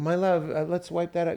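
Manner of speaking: high, honey-sweet, loving parent-like voice. Retelling how they'd speak to their own child about a spill: imitating a really sweet tone. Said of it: "really sweet".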